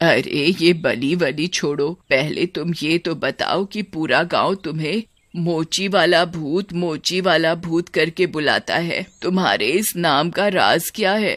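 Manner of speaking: put-on elderly woman voice, curious, coaxing and persuading. An old woman, sent as the sacrifice, speaks to the cobbler ghost; old village woman's voice. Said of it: "ये सब सुनकर वो बूढ़ी औरत बहुत घबरा जाती है। / वो जो नई नई आई है गांव में, वो बूढ़ी औरत। / वो बूढ़ी औरत। / वो बूढ़ी औरत।".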